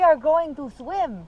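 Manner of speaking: put-on slow, loud German accent with a lisp.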